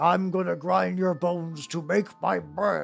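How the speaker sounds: stuffy, creaky, posh British aristocrat voice. Joking about what she'd say to a tiny person, in a Monopoly Man voice. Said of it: "I sound like the way I imagine like the Monopoly Man sounds".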